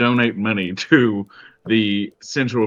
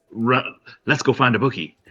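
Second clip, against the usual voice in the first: gleeful, excited, eager, itching to go. Voicing a gambling-loving character rushing off to find a bookie: excited. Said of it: "He's so fucking excited".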